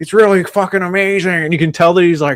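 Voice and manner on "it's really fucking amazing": raised pitch, spoken without the lips ever touching. Retelling a movie scene: imitating Nicolas Cage talking without lips. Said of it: "he's trying to do something where he's not touching his lips together".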